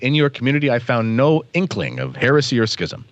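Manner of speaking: ordinary delivery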